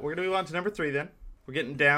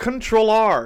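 goofy, silly, stupid-sounding put-on voice; 7 semitones higher, 10 dB louder than usual. Saying a word in Spanish in their silly stupid voice. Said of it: "I'm going to say it in my stupid voice".

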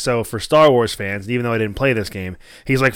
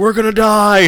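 put-on gleeful screaming with laughter, higher and louder; 10 semitones higher, 7 dB louder than usual. Retelling a movie trailer moment: Drax gleefully screaming and laughing. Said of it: "'cause he's gleefully screaming and laughing".

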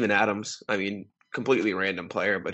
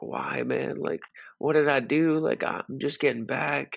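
upset, tearful, high crying voice; 6 semitones higher than usual. Retelling a player's reaction to being traded: imitating Derrick Rose crying. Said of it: "And he's, like, crying".

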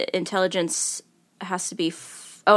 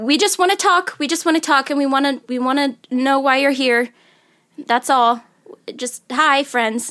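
pressing, urgent, pitched-up tone; 7 semitones higher than usual. A player speaks in character to a creature while casting a spell: urgent voice. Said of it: "She says with a voice of urgency".

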